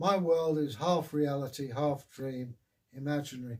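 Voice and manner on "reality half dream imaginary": normal talking voice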